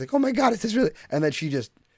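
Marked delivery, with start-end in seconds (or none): 0.1-0.9 put-on acted very high, flustered panic in kid voice. Retelling how a bigger kid reacts in martial arts class: imitating a panicked kid.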